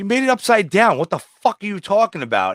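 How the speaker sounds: put-on high, swooping, heated scolding outburst. Retelling an argument with a worker over a food order made upside down, retelling own screaming. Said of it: "And I'm like screaming at the guy".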